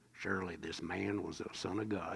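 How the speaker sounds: quiet, low-pitched southern drawl. Quote the Roman centurion's words as pictured in that movie, in a John Wayne voice, southern accent. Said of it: "with this southern accent".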